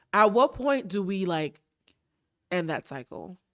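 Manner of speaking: teary voice catching, choking up, close to tears. In a conversation, holding back tears, choking up. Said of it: "So I'm not going to cry".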